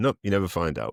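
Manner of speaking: put-on laughing while speaking. Retelling a parent's reply after a film's cliffhanger: imitating dad laughing while talking. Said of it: "my dad just laughing and going".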